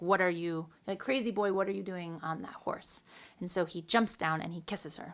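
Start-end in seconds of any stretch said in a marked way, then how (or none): none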